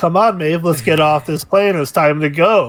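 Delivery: mock casual, nonchalant tone. Retelling a character urging maeve off a plane: imitating a nonchalant tone. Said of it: "he's so, like, nonchalant about it".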